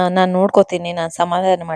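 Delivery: ordinary delivery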